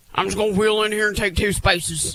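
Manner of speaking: dismissive, offhand dude voice. Imitating how guys park, in a Zach voice. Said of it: "that's also your Zach voice".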